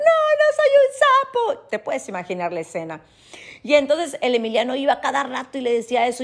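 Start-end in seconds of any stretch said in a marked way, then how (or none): 0.0-1.7 put-on crying, very high, slow and drawn-out. Retelling the younger sister's reply to her brother's teasing: imitating an angry crying girl. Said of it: "Y ella se enojaba y empezaba a llorar".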